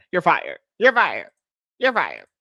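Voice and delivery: swooping, sing-song delivery. Joking that he fires everybody after years on a reality show: imitating a reality-show boss firing people. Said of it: "he's like".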